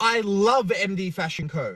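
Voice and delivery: ordinary talk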